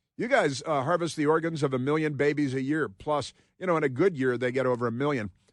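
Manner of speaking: ordinary delivery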